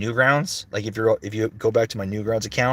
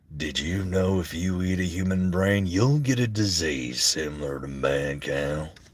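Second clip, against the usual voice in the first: deliberate, drawn-out, low, slow character voice; 4 semitones lower, 4 dB quieter than usual. Voice actor asked about his work shows a line from his character, in Bob character voice. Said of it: "Can I do a Bob line?".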